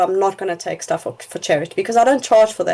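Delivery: plain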